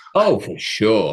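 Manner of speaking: tongue-in-cheek sarcastic tone. Answering a question about people in big houses: sarcastic. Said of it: "that was, like, sarcastic".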